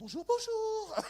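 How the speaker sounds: gentle, dainty, sweet little voice, very high. Recounting how he greets people when he arrives, in a small soft voice. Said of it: "tu prends une petite voix douce".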